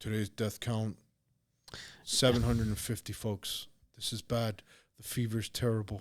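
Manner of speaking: formal press-briefing announcer style delivery. Retelling the daily news briefings on every station: imitating Governor Cuomo. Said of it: "Governor Cuomo that was on every news station".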